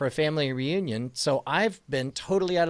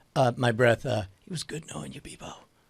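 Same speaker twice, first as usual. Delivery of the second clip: whisper under the breath, much lower; 3 semitones lower than usual. Watching someone walk toward a group of people, whispering under breath. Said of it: "I whisper under my breath".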